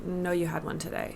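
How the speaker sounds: bone-dry, quiet, flat deadpan. Speaker recounting turning down their mom's request for a hug, retelling a deadpan reply. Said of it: "Like straight face, deadpan".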